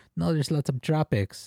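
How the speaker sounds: put-on insistent Filipino accent. Retelling a comedy bit where a travel agent speaks: filipino accent. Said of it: "does this Filipino accent".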